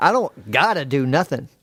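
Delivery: ordinary delivery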